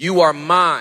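firm, possessive emphasis on each word. Reading a promise aloud to listeners, possessive emphasis. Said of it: "Listen how possessive these next three words are".

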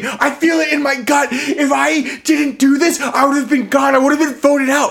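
very shrill, very high screamed outburst. Retelling what a housemate said after grabbing the apple: imitating someone screaming. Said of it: "he's screaming".

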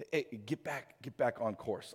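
gentle, kindly, soft-spoken urging voice. Comparing the Holy Spirit to a GPS, gently voicing the Holy Spirit. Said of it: "with the gentleness of his spirit going".

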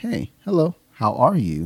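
slow gentle drawn-out voice. Retelling greeting a staff member: imitating own slow soft talk. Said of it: "talking to her really slow".

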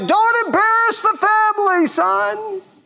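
very high, drawn-out hollering yell. Retelling how a dad yelled at his son batting in a game: imitating a dad yelling. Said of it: "He would yell".

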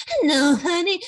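campy character voice. Retelling an actress's line from a musical: Ellen Greene impression. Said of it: "an Ellen Greene impression from the movie".

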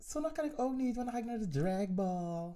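high-pitched voice.

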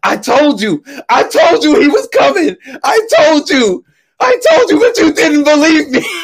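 acted-out yell. Retelling being on stage, yelling at friends who didn't believe him: retelling yelling at friends. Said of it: "So I'm yelling at my friends on stage".

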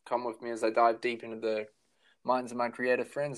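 normal talking voice

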